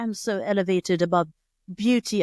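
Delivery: fake British accent, slow and drawn out. Mocking people who ignore beauty, speaking in a put-on British accent. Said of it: "I don't know why you have a British accent".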